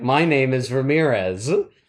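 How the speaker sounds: put-on movie-star-style Scottish accent. Retelling a film scene where Sean Connery introduces himself: Sean Connery Scottish accent. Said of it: "in his Scottish accent".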